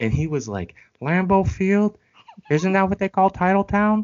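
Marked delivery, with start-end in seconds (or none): 1.0-4.0 very high, pitched-up, puppet-style voice. Retelling what a coworker said in his voice: Kermit the Frog voice. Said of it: "He had a Kermit the Frog ass motherfucker voice".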